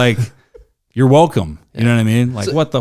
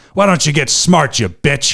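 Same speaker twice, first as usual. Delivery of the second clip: put-on old man voice with a jabbing, insulting tone; 3 semitones higher than usual. Retelling an old man insulting a smoker at a bus stop: imitating an old man. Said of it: "he's like".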